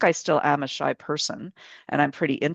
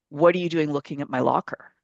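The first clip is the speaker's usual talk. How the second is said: put-on aggressive, hostile girl voice. Retelling what the girl with the next locker said: imitating an aggressive girl. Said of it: "got really aggressive".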